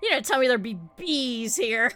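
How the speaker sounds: put-on indignant child voice. Quoting a kid's complaint about the bees: mock-indignant kid. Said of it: "She was just so indignant about it".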